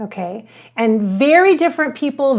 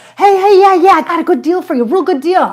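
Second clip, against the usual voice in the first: loud, pitched-up, pushy used-car-salesman patter; 6 semitones higher, 7 dB louder than usual. Imagining selling humanity like a used car salesman: pushy used car salesman voice. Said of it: "like a used car salesman".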